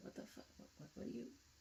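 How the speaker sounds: fast, hushed whisper of wary, suspicious disbelief. Retelling a scene where a woman reacts to an ordering man, imitating a suspicious woman. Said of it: "the woman was like suspect".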